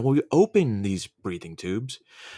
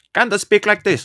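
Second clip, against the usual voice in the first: fake Chinese accent, pitched very high; 10 semitones higher, 8 dB louder than usual. Joking about being recast in a movie, then putting on a fake Chinese accent. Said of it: "That was fucking Chinese or some shit".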